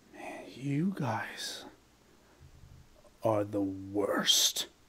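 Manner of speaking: slow, hushed, breathy whisper. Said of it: "recognize instantly the voice of the Shadow".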